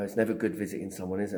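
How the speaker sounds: plain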